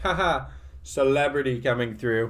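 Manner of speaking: slow, playful, put-on teasing, jokey tone. Retelling walking past a woman who jumped out of his way, retelling own joking remark. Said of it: "Like jokingly".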